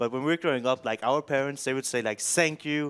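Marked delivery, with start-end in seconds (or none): 2.2-2.9 put-on very thick, laid-on Danish accent. Retelling how parents spoke english: imitating a super thick danish accent. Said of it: "a super thick accent".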